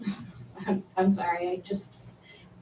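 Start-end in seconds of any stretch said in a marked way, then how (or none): 0.7-1.9 choked-up, emotional, near-silent voice break. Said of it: "I'm getting emotional".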